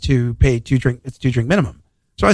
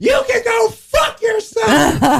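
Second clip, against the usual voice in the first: put-on screaming, higher pitch. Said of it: "screamed at me".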